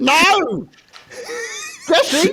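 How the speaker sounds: very high, swooping, sing-song whining woman's voice. Mocking another speaker's impression as a whining lady from Portsmouth.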